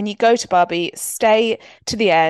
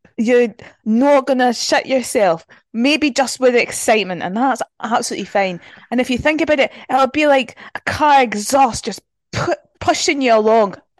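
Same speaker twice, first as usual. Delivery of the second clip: pitched-up, play-acted put-on Scottish brogue; 5 semitones higher than usual. Reading a well-wisher's message to a marathon runner, in a put-on Scottish accent. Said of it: "Should we do it in Scottish?".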